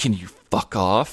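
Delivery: put-on muttered whisper under breath. Retelling how a classmate answered a teasing friend, whispering under his breath. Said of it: "Simon is whispering under his breath".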